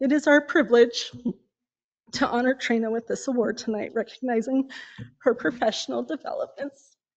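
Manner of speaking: tearful, close to crying. Presenting tonight's award to a friend at a ceremony, tearful. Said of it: "Sorry, I'm a crybaby".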